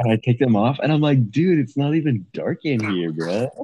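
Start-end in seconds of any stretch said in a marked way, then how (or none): 1.3-3.6 full, all-in surfer-dude voice. Retelling what you blurt when you take them off, go full surfer voice. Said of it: "I go full like surfer voice".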